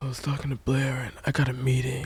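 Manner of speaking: low, gravelly muttering voice. Imitating how the actor playing Chuck Bass talked: gravelly Chuck Bass voice. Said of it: "just talking this gravelly".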